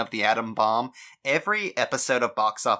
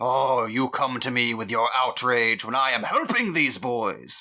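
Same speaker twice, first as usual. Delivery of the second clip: mock villainous headmaster voice. Mocking another speaker's argument by sounding like an evil headmaster, in an evil headmaster voice. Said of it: "you just sound like the evil headmaster who's like".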